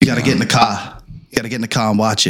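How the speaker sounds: put-on Boston accent. Urging someone to watch The Departed, imitating a Boston accent. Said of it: "But you and your Boston".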